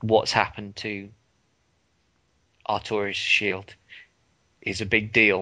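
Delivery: halting, choked-up voice, catching and breaking mid-phrase. Explaining a game's story to someone, choking up. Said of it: "I am choking up at this".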